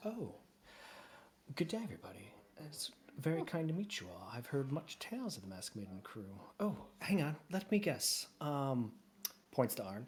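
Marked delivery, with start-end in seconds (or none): 0.0-8.3 in-character put-on lady voice. Voicing a half-elf who pokes her head in: Miss Adams voice. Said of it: "And she goes".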